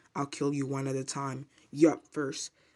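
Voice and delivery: ordinary talk, nothing marked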